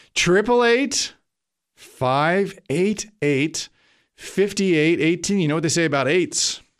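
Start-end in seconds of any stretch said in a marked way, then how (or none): 0.2-5.4 said more slowly, deliberately slowed down. Speaker repeating a call-in number for listeners a second time, slower. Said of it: "I'll say it slower".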